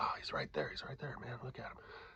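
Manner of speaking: breathy whisper under the breath. Retelling watching a man from the top of the stairs: imitating D Jones whispering. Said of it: "and he's whispering".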